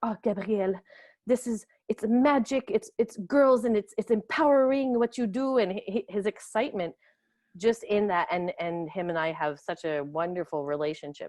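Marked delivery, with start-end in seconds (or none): 0.0-5.6 put-on lovely, excited French accent, bright and raised. Quoting him excitedly praising gabrielle's camp, imitating his french accent. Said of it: "in his lovely French accent".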